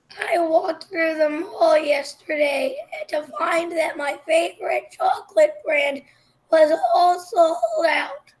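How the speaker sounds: very loud, rough, hoarse throaty voice. Tig, asked by friends to say something random so they can hear his voice: hoarse voice. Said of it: "do you hear how his voice sounds?".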